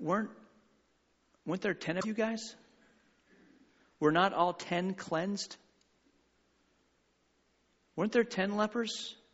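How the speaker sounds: put-on hurt, wounded tone. The speaker retells Jesus's words about ten cleansed lepers, acting out Jesus' wounded voice. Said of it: "can you hear the woundedness in Jesus' voice".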